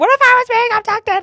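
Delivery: very high, tearful, crying, angry yelling. Recounting the moment, the speaker acts out yelling at her: retelling a tearful angry yell. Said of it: "Now I'm crying and I'm mad, like yelling at her".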